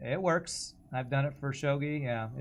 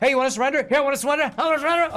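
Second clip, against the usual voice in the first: mock yelling, higher and louder; 13 dB louder than usual. Imitating the enemy ship offering surrender mid-fight: imitating an enemy yelling. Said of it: "Stop yelling".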